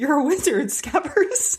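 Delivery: very high-pitched, grand, dramatic delivery. Imagining the line in the back of their head: Hagrid voice. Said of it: "the Hagrid voice".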